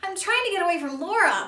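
gasping, out of breath. Percy stops running and answers Bob, gasping, out of breath. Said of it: "Percy gasped".

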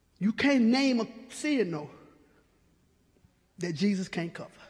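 slow, low, deliberate, each word drawn out. Speaking to an audience about sin, making sure they catch it: said slowly. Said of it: "I said it slowly so you could catch it".

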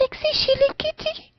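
high kitty voice. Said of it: "the high voice".

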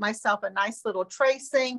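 ordinary delivery

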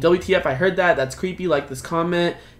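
plain

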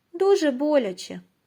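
sympathetic, caring, compassionate tone. The butterfly asks the lion cub a question; sympathetic question. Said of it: "співчутливо запитав метелик".

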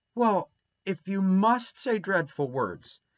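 earnest, pleading, begging tone. Dora answers Davy's defiant retort, pleading. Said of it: "pleaded Dora".

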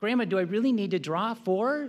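put-on small, cute five-year-old girl voice. Retelling a card game where Rachel asks Grandma a question, in her cute five-year-old voice. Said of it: "in her cute little five-year-old voice say".

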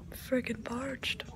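slow, drawn-out whisper.

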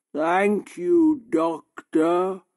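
odd, strange, slow, unhurried way of speaking. Joseph answers the doctor who wants nurses to help him, in a strange, slow voice. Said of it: "in his strange, slow voice".

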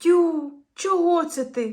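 astonished, high, drawn-out, surprised exclamation. Reading a story, a character reacts to the rescued one's grimace, surprised. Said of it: "здивувався Кузя".

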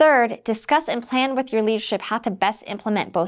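plain reading voice

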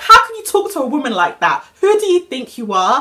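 mock all-out scream, loud outburst. Retelling her reaction when a man told Ava to shut up; retelling her own scream. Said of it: "I literally screamed".

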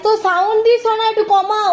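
called out high and loud.

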